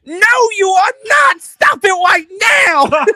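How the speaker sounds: very high, very loud, shrill squeaky voice. Acting out Luke answering Darth Vader's famous line; high-pitched Luke Skywalker voice. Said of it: "How high pitched he".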